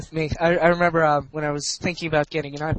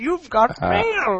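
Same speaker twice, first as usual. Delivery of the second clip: high-pitched put-on Indian accent, done for laughs; 7 semitones higher than usual. Joking about a mail guy in India announcing mail, in an Indian accent. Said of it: "Mail guy in India".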